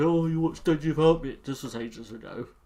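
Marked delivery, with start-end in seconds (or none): 0.0-1.4 mock whining moan, louder. Heading off the other speaker's complaint about watching a trailer without them: mock-whining. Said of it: "before you moan".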